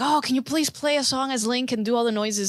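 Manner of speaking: ordinary talk, nothing marked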